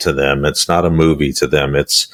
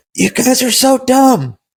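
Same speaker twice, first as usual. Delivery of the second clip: very high-pitched yelling. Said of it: "somebody out there in their car right now is yelling".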